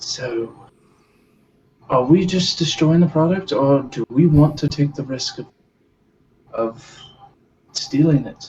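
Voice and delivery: quiet, low, hushed voice. Voicing Miyagi asking a companion about the product: low voice so nobody hears. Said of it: "Miyagi's gonna say this low enough".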